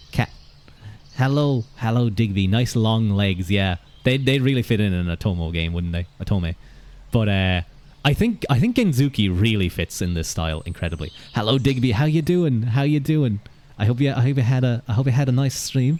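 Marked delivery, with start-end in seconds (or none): 11.3-16.0 half-working, failed attempt at a British accent. Speaker greets someone on stream, attempting a British accent. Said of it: "I was trying to do a British accent".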